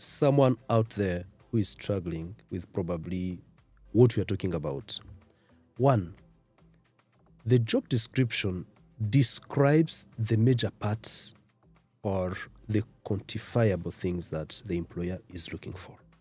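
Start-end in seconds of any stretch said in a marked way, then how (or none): 5.8-16.0 very slow, deliberate delivery, each word weighed. A guest in a conversation, wanting to reach struggling listeners; speaking very slowly. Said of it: "I want to speak very slowly".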